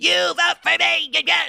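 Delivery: very high-pitched, squeaky, raspy, forced fake gruffness. Mocking a politician trying to sound tough: imitating Hillary Clinton doing a gruff voice. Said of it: "trying to do this gruff".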